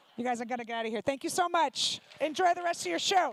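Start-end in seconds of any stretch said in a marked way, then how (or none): none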